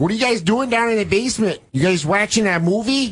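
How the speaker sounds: put-on high-pitched north Chicago accent. Speaker imitates fun parents asking the kids in the basement, in a North Chicago accent. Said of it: "they had that North Chicago accent".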